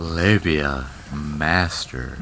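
very low, slowed-down, drawn-out sexy voice. Showing another speaker how the phrase should be said, saying it sexy. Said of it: "It's say it sexy".

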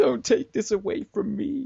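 high, begging, emotional pleading tone. Retelling a character begging the coach to take him back: imitating an emotional plea. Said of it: "he's sort of doing all these emotional shit".

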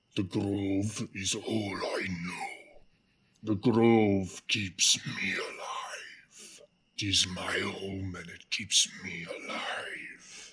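heavy, guttural creature voice through gritted teeth. A game master voicing a sick, restrained creature, in a guttural voice through its teeth. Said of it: "This thing is definitely sick and infected by something, / and the rest of you kind of hear this heavy guttural language come out of [name]'s mouth, / like speaking through its teeth. / Although it's".

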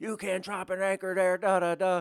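acted, shrill, very high-pitched screaming shout. Retelling a guy running out as the anchor drops, imitating someone screaming. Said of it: "started screaming at me".

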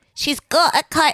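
put-on strangled cartoon-mouse voice. Showing a friend how a writer talks, imitating a writer's voice. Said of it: "and she talks like this".

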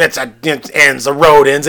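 mock grumbly, cranky man voice. Recounting a story, acting out a man hitting a dead end, imitating a grumbly man. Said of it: "And he's all grumbly".

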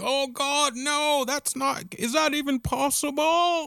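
very high-pitched, slow, stretched-out, horribly done drawl. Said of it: "that's my [name]".

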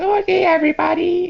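pitched-way-up anime voice.

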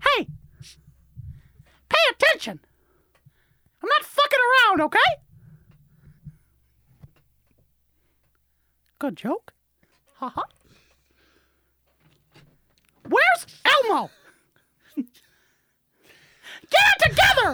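very high, loud, squeaky, swooping cartoon voice. Doing an Elmo versus Mickey Mouse bit: Mickey Mouse impression. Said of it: "Is that Mackie Moose?".

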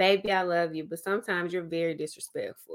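mock calmest voice, calm and quick-paced. Quoting a husband's response after being confronted, retelling a very calm reply. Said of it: "He said in the calmest voice".

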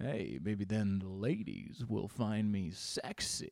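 low-register voice. Showing how they try to sound to attract women, in a lowered deep voice. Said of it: "lower the register of the voice and maybe try to get a little bit down here".

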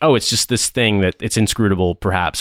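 ordinary talk

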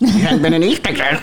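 put-on goblin voice. Mimicking the other speaker's often-repeated phrase, in a goblin voice. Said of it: "That sounds like a goblin".

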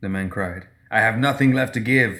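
plain

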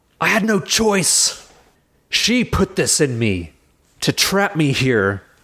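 lightly played, mild, high-pitched shout. The storyteller voices a trapped character's outburst, shouting. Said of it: "And she shouts".

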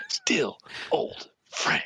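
venomous, spat through teeth. Quoting a film line, imitating Kirk spitting it out. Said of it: "spitting it out".

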